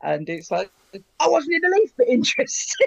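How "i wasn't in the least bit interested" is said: croaky boozy put-on voice, higher and louder. Quoting a comedy sketch: croaky Peter Cook voice. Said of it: "Cook's voice is, is croaky".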